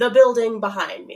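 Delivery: plain reading voice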